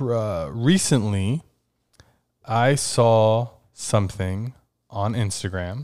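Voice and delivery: speaking very slowly. Searching for an Instagram post while telling friends about it, talking very slowly. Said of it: "I'm talking very slow".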